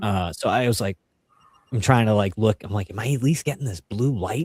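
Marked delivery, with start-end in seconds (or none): 2.9-4.5 whispered voice. Retelling seeing a blue light in the underbrush: imitating own past whisper. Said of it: "whispering that I'm seeing this stuff".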